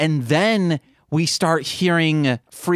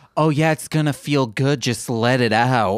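mock suggestive tone, lower pitch; 3 semitones lower than usual. Mocking how a movie character talked to someone throwing up: imitating a sexual tone. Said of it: "you're saying it like he said it sexually".

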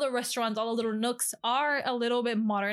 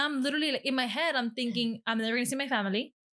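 normal talking voice

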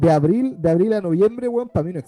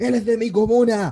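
mock yelling, slower pace; 4 semitones higher than usual. Speaker recalls a friend shouting at wrestlers as they entered, imitating Fabián yelling. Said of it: "y gritaba a todos los luchadores".

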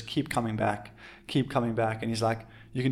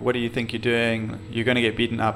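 put-on, very calm voice. Retelling a contest rival who knocked them off a wave: imitating someone speaking very calmly. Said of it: "very calmly".

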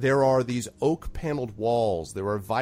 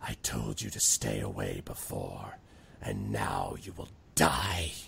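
raspy villain hiss, very low and soft; 7 dB quieter than usual. Reading a dark figure's line in a story, in a raspy hissing voice. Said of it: "The dark figure hisses in a raspy voice".

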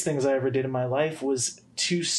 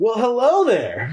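exaggerated, eager, high and loud enthusiastic voice; 8 semitones higher, 8 dB louder than usual. Retelling how they greet drive-thru customers: imitating own exaggerated enthusiastic voice. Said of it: "be enthusiastic too".

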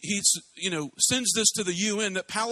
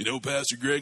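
put-on deep voice, lower pitch; 6 semitones lower than usual. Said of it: "he kind of talks in a deep voice".

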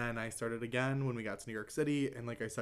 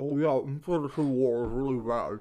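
loud words pushed out around a finger; 6 dB louder than usual. Reenacting someone talking while sucking toes: speaking with finger in mouth. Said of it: "this is my finger in my mouth reenacting".

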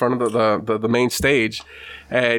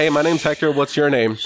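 usual speaking voice

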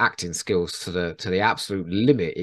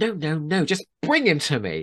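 high, mean, dismissive pitched-up tone; 8 semitones higher than usual. Quoting a character's line about a robot: imitating Toos being mean. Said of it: "she just goes".

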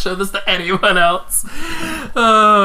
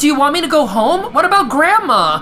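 raised-pitch voice; 6 semitones higher than usual. In a scene where the caller can't hear, shouting into the phone. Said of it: "You shout into the phone".

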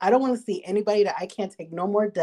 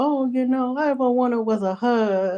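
high, weepy, tearful sobbing voice; 5 semitones higher than usual. Imagining a demon pleading at the end: mock crying demon. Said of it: "they're crying".

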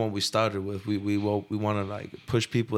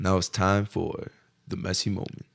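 put-on, deepened low voice. Announcing the next segment on request, in a put-on deep voice. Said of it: "deepen his voice".

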